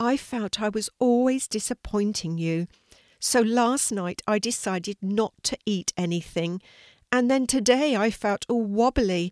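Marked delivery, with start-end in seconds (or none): none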